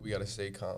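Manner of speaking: ordinary talk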